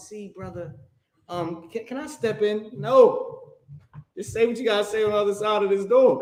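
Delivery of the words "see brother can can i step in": meek, soft-spoken, timid, polite preacher voice. Mocking a doorstep preacher as soft: imitating a soft-spoken Jehovah's Witness. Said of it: "they so soft and".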